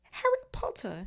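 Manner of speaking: very high-pitched elf voice. Reading a story, the narrator voices the creature greeting the boy in a high-pitched Dobby voice. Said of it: "said the creature in a high-pitched voice".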